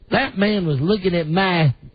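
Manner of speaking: put-on thick dirt-road Southern accent, laid on. Quoting a woman's words to a listener, in a real Southern accent. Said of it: "Real Southern accent".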